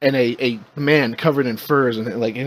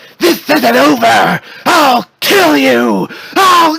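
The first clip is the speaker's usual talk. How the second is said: raging, very high, very loud, shrill, drawn-out scream; 13 semitones higher, 11 dB louder than usual. Voicing a defeated villain flying away, screaming at the Wookiee: screaming a threat. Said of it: "he screams at the Wookiee".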